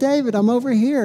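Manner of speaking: sweet, little high voice. Retelling a snack box calling to him in the store aisle, sweet little Little Debbie voice. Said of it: "I hear Little Debbie's sweet little voice".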